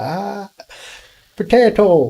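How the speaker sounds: put-on Irish brogue, very high-pitched. Asked for an accent, the speaker tries an Irish accent. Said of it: "I don't even think I can do an Irish accent".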